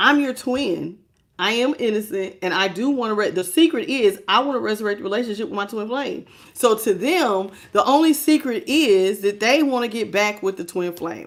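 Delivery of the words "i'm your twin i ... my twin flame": usual speaking voice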